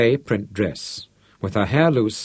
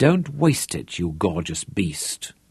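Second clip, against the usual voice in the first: low, soft murmur under the breath; 5 semitones lower, 3 dB quieter than usual. A woman replies to a man who just growled at her, murmured. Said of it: "Terry murmured".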